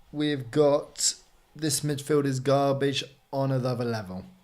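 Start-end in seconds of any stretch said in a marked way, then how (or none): none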